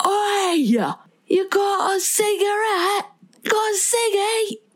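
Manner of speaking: put-on obnoxious, very high, slow drunk British drawl. Imitating drunk British people asking for a cigarette: imitating loud drunk British people. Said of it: "loud, obnoxious British people".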